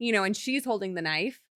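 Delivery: ordinary delivery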